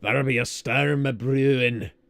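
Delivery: loud, booming put-on Scottish accent. Speaker quoting what Salazar would say, Salazar in a Scottish accent. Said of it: "I don't know why I'm giving him a Scottish accent".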